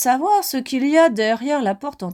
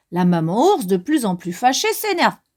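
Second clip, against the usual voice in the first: plain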